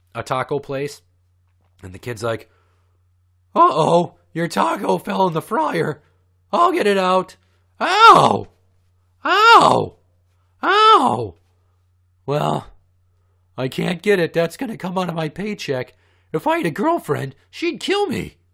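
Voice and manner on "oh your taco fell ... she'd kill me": put-on very loud, squeaky, voice-cracking nerdy teen voice. Retelling a scene from The Simpsons where Homer is at a taco place: nerdy teenage kid from The Simpsons. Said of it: "sounded like that fucking nerdy teenage kid".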